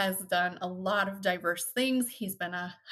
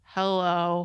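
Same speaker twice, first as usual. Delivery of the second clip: put-on unenthusiastic, dull voice, louder; 6 dB louder than usual. Imitating a friend's greeting on the podcast: Scott Forbes's unenthusiastic hello. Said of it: "was the literal worst".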